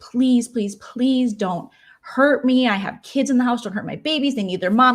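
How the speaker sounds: mock, desperate, begging pleading tone. Retelling a robbery, speaker voices the robbed mother, imitating a woman pleading. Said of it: "she's pleading for her life".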